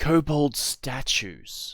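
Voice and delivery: secretive, close, hushed, soft confiding whisper. Voicing a character who leans in to another player: whispering. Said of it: "she whispers in Draconic".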